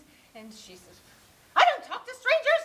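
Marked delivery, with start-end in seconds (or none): 1.6-2.6 silvery voice, very high, very loud, ringing. Retelling how a woman answered his phone call, high silvery voice. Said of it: "she has this uh, high, silvery voice".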